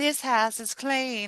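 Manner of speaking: cutesy, high, slow, off-kilter Southern drawl. Describing a movie scene after a hair toss, the speaker does Tangina's weird Southern-ish accent. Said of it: "Like her little like weird Southern".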